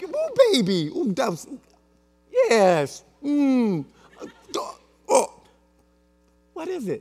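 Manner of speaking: mock unimpressed, faltering, hesitant, swooping, drawn-out voice. Retelling a parent's reaction to a child's gift: imitating an unimpressed parent. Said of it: "but you're not so quite".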